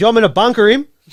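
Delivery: loud, high-pitched shout. Retelling what someone turned around and said at training, retelling a loud shout. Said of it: "said very loud".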